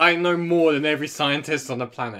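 ordinary delivery

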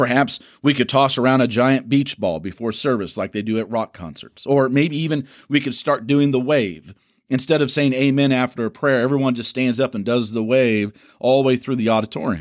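ordinary talk

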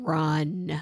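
mock bone-dry deadpan, stretched out, dead dry. Retelling what the son said to a chair-kicking girl: imitating a deadpan delivery. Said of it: "he said with a deadpan face".

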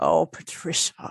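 hushed, breathy murmur full of deep sympathy. Retelling what Patrick Stewart said on seeing her, with deep sympathy. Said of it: "Just like with deep sympathy".

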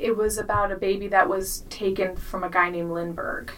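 normal talking voice

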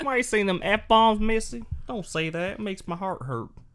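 very high-pitched, creepy southern voice. Scolding someone for swearing, in a put-on character: southern Kermit voice. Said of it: "That was like a southern creep".

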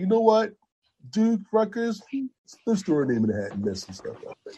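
high, cocky, bragging voice full of bravado. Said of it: "He's so cocky".

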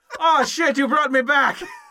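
put-on startled exclamation. Acting out a man sitting up in a coffin in a staged video, imitating surprise. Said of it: "Because he looks so surprised".

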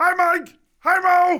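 very high, drawn-out, loud voice. Greeting the hosts while imitating a figure on the shelf: Pee-wee Herman voice. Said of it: "The voice, B minus, maybe C plus".

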